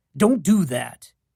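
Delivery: said with fierce force. Reading a scene, telling her not to put herself down: fierce voice. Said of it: "My voice is fierce".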